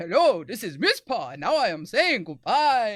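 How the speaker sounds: deep, loud, booming vampire voice, dropping low. Redoing the sign-off for the chat, in Miss Paw vampire voice. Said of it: "I had to sound like more like a vampire".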